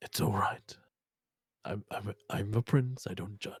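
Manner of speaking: hushed, soft whisper. In a roleplay scene, a prince character whispers toward another character. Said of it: "He just whispers towards you".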